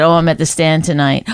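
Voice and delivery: normal talking voice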